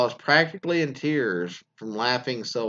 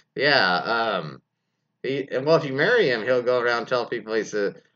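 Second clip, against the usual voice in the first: usual speaking voice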